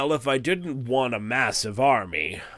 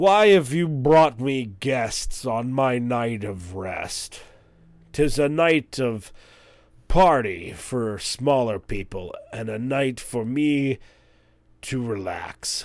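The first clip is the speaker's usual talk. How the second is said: slow, drawn-out hill giant voice. Voicing a lounging hill giant greeting approaching guests: hill giant voice. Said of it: "he looks to the man who brought you and says".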